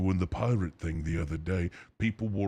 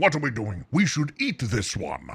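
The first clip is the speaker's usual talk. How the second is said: loud, booming monster voice with big swooping swings; 6 semitones higher, 5 dB louder than usual. Showing the voice used before: Venom voice. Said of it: "that actually does sound like Venom".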